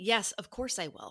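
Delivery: ordinary delivery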